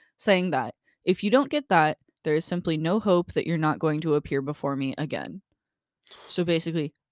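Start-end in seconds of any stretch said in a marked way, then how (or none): none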